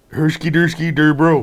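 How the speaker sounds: very loud, high, gung-ho put-on Swedish accent babble. Saying a greeting after being asked for it: Swedish Chef voice. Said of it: "Can you say it like the Swedish chef?".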